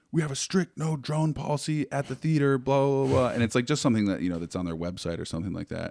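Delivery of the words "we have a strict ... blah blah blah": high, frantic put-on delivery. Recounting how another man came up to them, the speaker quotes him, imitating a frantic man. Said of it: "he's like frantic".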